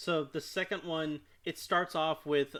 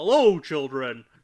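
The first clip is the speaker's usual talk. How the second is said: booming voice in 1950s movie style; 12 dB louder than usual. Describing the principal character's greeting to the children, in a 1950s movie voice. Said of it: "he has a very fifties movie voice".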